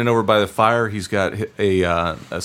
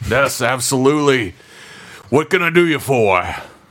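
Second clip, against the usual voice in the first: put-on chatty, bantering elderly dwarf voice; 4 semitones higher than usual. Playing a dwarven smith welcoming visitors in a role-play, old dwarf voice. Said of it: "Common problem with dwarves my age".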